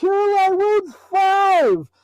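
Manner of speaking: top-of-the-lungs, loud, very high yell. Speaker retells yelling so the others know what's going on: retelling a top-of-lungs yell. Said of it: "I yell at the top of my lungs".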